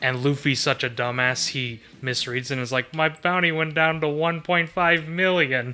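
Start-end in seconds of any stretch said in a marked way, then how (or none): 2.9-5.7 gloomy, dejected, depressed, crestfallen delivery. Retelling a gag where Luffy misreads his bounty: imitating depressed Luffy. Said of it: "And he's so depressed".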